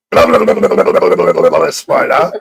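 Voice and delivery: loud, bellowed stream of nonsense blah-blah babble. Retelling someone coming onto a panel: imitating someone shouting. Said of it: "shouting fucking".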